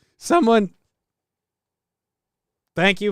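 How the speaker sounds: breaking, cracked voice, cracking mid-word. Speaker mid-sentence, voice cracking. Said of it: "voice crack".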